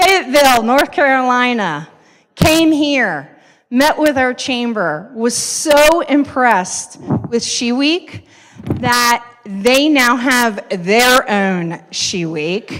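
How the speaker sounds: very slow, drawn-out, stretched delivery. Stretching a fact to make it last one more minute, talking really slow. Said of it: "I'm going to talk really slow".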